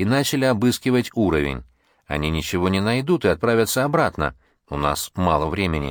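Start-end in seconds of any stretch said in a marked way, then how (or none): none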